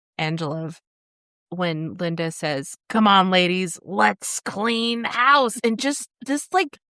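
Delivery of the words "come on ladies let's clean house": imitated raspy woman's voice. Speaker tells Angela a favorite moment, quoting Linda: raspy Linda impression. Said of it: "the rasp in her voice when she says house".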